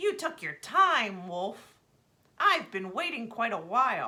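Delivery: loud, harsh, coarse, rude raven croak. Narrator reads the raven greeting Nishaba the wolf: loud, coarse, rude raven voice. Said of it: "the bird's voice was loud, coarse, and rude".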